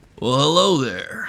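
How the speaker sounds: very loud, booming ship's captain voice. Voicing the ship captain greeting the party: captain Cecil voice. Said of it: "he just says".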